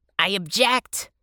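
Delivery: self-important, pompous, full of himself. The hedgehog answers the bunny's question about the map, speaking importantly. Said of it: "the hedgehog said importantly".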